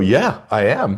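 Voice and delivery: keen, wholehearted, enthusiastic and eager tone. Acting out a patient's reply to a tag question: imitating an enthusiastic yes.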